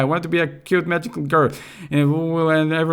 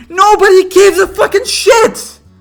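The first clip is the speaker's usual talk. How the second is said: very high, shrill, very loud, angry outburst; 10 dB louder than usual. Fed up with how long the game is, the speaker breaks into an angry outburst. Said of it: "I'm sorry that I'm getting upset".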